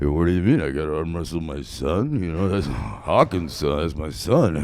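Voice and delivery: very low, dropped put-on voice. Performing a movie trailer bit, doing a Sylvester Stallone impression. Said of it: "on that Sylvester Stallone shit".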